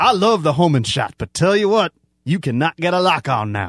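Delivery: overdone Southern gentleman accent. Talking about a game with co-hosts, in a put-on Southern gentleman accent. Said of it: "Where did this vaguely racist accent come".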